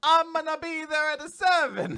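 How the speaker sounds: butchered fake Italian accent, very high, shrill, loud. Showing how he writes boring text messages to people, in a bad Italian accent. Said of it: "Like bad Italian accent".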